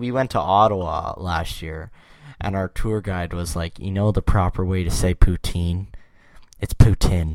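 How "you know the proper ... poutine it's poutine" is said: ordinary delivery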